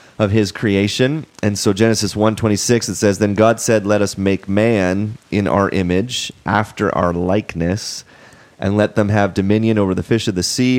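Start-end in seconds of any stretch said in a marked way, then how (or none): none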